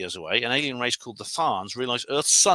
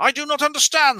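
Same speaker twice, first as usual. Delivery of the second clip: put-on high, loud booming voice; 14 semitones higher, 6 dB louder than usual. Retelling a scene where aliens answer from above: imitating a booming voice. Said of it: "says this booming voice from above".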